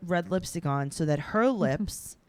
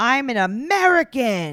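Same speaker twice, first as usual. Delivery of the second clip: loud screamed voice; 4 semitones higher, 7 dB louder than usual. Describing a woman's outburst after she lights a new cigarette: retelling a scream. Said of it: "she screams".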